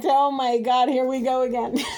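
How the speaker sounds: talking through laughter. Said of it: "I'm laughing because I'm overwhelmed".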